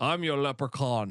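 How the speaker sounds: put-on Scottish accent, movie-star voice. Doing an impression for the other hosts when asked: Sean Connery impression. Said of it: "talks like this".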